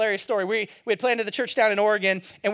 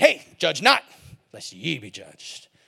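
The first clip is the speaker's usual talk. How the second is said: very low, swooping growl full of attitude; 10 semitones lower than usual. Demonstrating how people quote the scripture, loud with attitude and a growl. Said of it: "say it with about that much volume and attitude".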